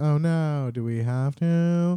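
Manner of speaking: play-acted, very drawn-out, slow sobbing with dismay. Retelling a story scene where characters sob together: imitating characters sobbing. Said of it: "they're just sobbing, and they're like".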